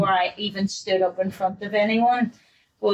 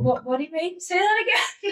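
high-pitched, baffled, pleading tone. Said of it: "everyone was like".

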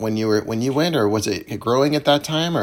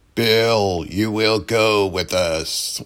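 terrible super deep voice, very slow. Retelling how someone invited you to join them: imitating Doug's super deep voice. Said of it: "He still had that super deep voice".

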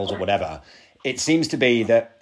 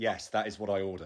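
mock-deadpan delivery, much quieter; 12 dB quieter than usual. Speaker acts out Carl answering a waitress about his order: imitating Carl's deadpan. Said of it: "It's just an absolute deadpan delivery".

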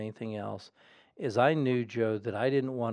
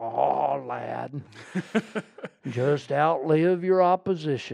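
loud, raised, full pulpit preacher voice; 4 semitones higher, 5 dB louder than usual. Remembering Dr. Criswell standing up there giving advice, do a Dr. Criswell impression. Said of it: "hearing the Criswell impression".

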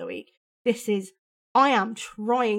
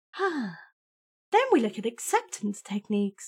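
slightly patronizing, very slow, sing-song condescending tone. Describing the therapy steps after getting help: slightly condescending. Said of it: "I'm using my slightly condescending voice when I say that".

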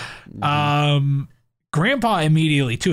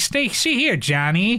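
put-on old-time gangster voice, much higher; 7 semitones higher than usual. Describing how a character in a scene talks, old-timey gangster voice. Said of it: "He also talks vaguely like an old-timey gangster".

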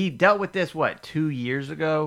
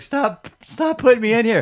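put-on cracking voice, higher and louder; 10 semitones higher, 8 dB louder than usual. Imitating a fighter who does not want to fight: imitating with a cracking voice. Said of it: "His voice keeps cracking".

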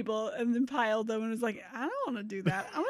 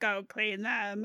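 robot voice, quieter and slower; 2 semitones lower, 4 dB quieter than usual. Retelling what a robot ordered on noticing the dishes, in a robot voice. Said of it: "do you like my robot voice?".

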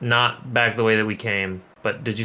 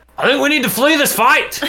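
very high, enraged, raging shriek; 7 dB louder than usual. Voicing a raging character telling allies to flee: raging character yelling. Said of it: "I'm still raging, so yeah, I'm gonna be like".

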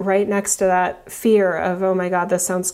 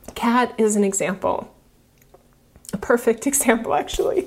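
tearful voice, on the verge of tears; 3 semitones higher than usual. Telling about a patient who chose chemo and is still cancer-free; teary. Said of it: "I'm all teary".

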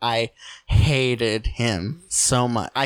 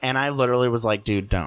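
ordinary talk

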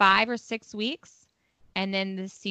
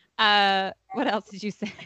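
plain

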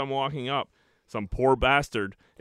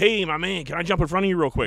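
quick, pitched-up fast-talking delivery; 5 semitones higher, 4 dB louder than usual. Retelling a stranger asking to cut in line: imitating a fast talker. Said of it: "This fast-talking foreigner".

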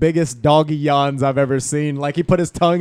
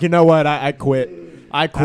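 ordinary talk

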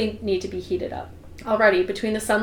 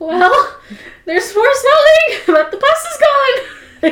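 wavering, unsteady, very high, very loud voice; 9 dB louder than usual. Reading a novel aloud, the first-person narrator speaks her own line in an unsteady voice. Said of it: "I say in an unsteady voice".

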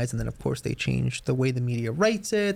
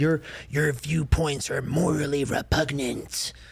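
put-on demonic voice, slower. Quoting what a woman suddenly said to you, in a demonic voice. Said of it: "Like in this like demonic voice all of a sudden".

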